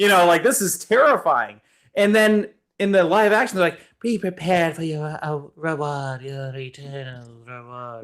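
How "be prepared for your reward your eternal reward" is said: tame, slow, drawn-out villain voice, menace softened. Imitating the live-action Jafar: watered-down live-action Jafar. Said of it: "they watered down a lot of scenes".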